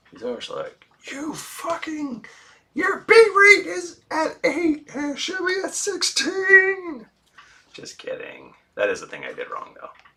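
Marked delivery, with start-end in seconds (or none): 1.0-7.0 very loud, high, shrill, drawn-out bellowing yell. Retelling how David yells: imitating David yelling. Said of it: "He just yells at me".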